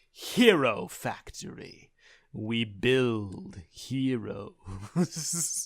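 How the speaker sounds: ominous, low, very slow sinister trailer voiceover. Retelling how the Hero Factory voiceover ended, mock-sinister voiceover. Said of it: "they ended on a sinister note".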